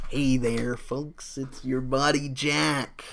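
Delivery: nasal put-on voice, all pushed through the nose. Showing how the put-on podcast voice began: Jack Nicholson impression. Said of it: "it started as a Jack Nicholson".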